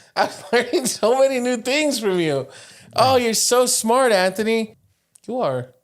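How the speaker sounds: very high, loud, heavily ironic tone. Praising another speaker after he explains a word: sarcastic. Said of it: "did it come off a little bit sarcastic".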